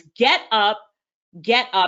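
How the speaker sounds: deep, slow, repeated urging tone. Retelling a friend's phone call urging her off the sofa: deep Les Brown voice. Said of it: "in that deep Les Brown voice".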